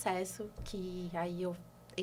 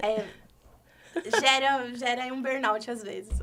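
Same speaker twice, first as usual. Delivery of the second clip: loud nervous laughter mid-sentence, through the words; 3 semitones higher, 7 dB louder than usual. Talking about psychologists' stress and burnout, nervous laughter while talking. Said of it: "Tô rindo, mas é de nervoso".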